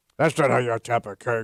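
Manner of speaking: put-on crusty old man voice. Joking about an older coworker crashing a teen party, in a crusty old man voice. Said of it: "nobody wants some crusty old Vizuck".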